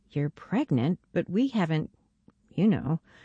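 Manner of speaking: ordinary talk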